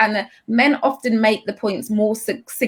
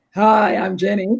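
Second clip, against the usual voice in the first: overdone put-on deep, low bass voice. Voice advice, showing an overdone lowered voice: exaggerated deep voice. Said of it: "lower your voice a bit and deepen it a little bit, I don't mean".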